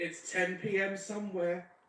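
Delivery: mocking parody woman voice. Mocking women who think wine during the day is risky: mocking imitation of wine women. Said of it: "They say things like".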